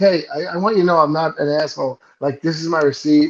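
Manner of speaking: normal talking voice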